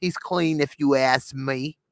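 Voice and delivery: put-on New York accent. A speaker retells a woman's verdict in a story, new york accent. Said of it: "She got a New York accent".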